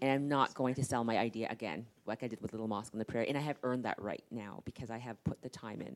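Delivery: ordinary talk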